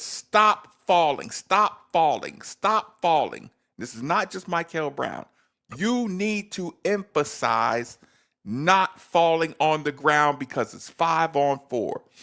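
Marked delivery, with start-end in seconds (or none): 0.0-3.5 acted yelling, repeated over and over, restrained. Retelling yelling at a player to stop falling: imitating own yelling. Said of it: "I yell it".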